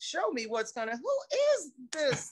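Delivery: play-acted indignant outburst. Retelling being asked to watch someone show the part: retelling own indignant reaction. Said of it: "So now I'm really indignant".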